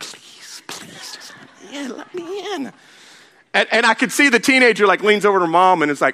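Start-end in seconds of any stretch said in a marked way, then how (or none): 0.0-2.7 hushed, slow, begging, pleading whisper. Retelling a plea to a driver to be let into the lane: pleading to be let in. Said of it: "I'm like".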